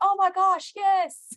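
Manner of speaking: high, loud, thrilled freaking-out squeal. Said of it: "I was freaking out going".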